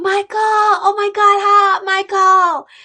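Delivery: very high, delighted, overjoyed, drawn-out delivery. Showing how people say the name when happy: imitating a happy greeting. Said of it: "When people are happy to say".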